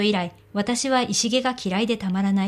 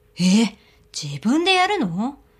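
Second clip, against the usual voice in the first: surprised, taken-aback tone; 3 dB louder than usual. Narrating a character's reply about doing it herself: surprised. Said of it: "意外そうに言う".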